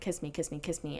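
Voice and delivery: words muttered softly and quietly under the breath. Retelling what a man said under his breath on a red carpet: imitating someone muttering through a grin. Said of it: "same thing, grinning".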